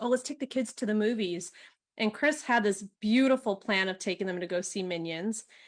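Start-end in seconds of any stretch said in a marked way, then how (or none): none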